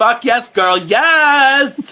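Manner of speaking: put-on flamboyant camp voice, very high and very slow.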